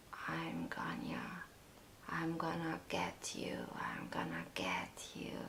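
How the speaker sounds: eerie, menacing, very hushed creepy whisper. Retelling a goggled figure in a dark room threatening: imitating a really creepy voice. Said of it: "talking to me in a really creepy voice".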